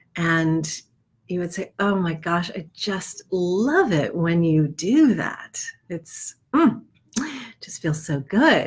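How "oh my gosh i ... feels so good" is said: slow, breathy, rounded voice. Describing a voice becoming rounder, more open and slower: breathy Marilyn Monroe voice. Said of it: "it might become rounder and more breathy and just kind of open and and uh, slower".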